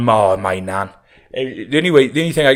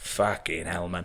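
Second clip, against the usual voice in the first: audible, quiet muttering under the breath; 6 semitones lower, 12 dB quieter than usual. Retelling a granddad's reaction to the waiter: imitating a mutter under his breath. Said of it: "my bamps goes under his breath".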